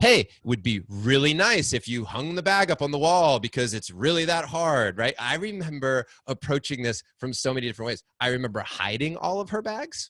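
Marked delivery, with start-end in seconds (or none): 0.0-5.0 loud, sarcastic, fake-nice voice. Retelling another way he asked about the bag: imitating a sarcastic request. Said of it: "with sarcasm".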